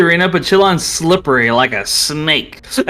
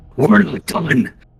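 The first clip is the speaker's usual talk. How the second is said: very demonic voice. Voicing a new voice coming out of a fighter: very demonic voice. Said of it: "a very demonic voice".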